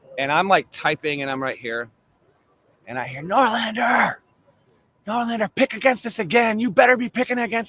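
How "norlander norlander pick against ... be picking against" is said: mock coach voice, high-pitched, screaming and taunting. Retelling a coach yelling at him from the court: imitating a coach screaming. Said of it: "he's screaming it at me".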